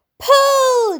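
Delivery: very high, drawn-out, stretched shout on pull. Calling on the others to pull the earthworm away from a beak; shouting. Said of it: "shouted James".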